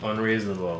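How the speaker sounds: dead-level deadpan, flat monotone, no inflection. Repeating a requested catchphrase on command, in flat monotone. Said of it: "Did I do it monotone enough?".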